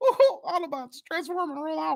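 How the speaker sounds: very high-pitched cartoon mouse character voice. Showing the only voice he can do half decently, Mickey Mouse voice. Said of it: "only voice I can do either bit half decent is Mickey Mouse, and it really sounds odd if you go".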